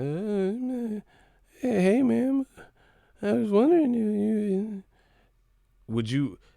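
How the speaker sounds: put-on very high, very slow, halting nervous stammer. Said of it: "I sound like I was afraid of her".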